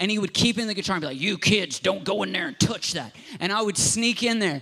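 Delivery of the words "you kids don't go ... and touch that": put-on old grandpa character voice. Retelling what a grandfather used to tell the kids: put-on grandpa voice. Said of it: "that was my grandpa voice".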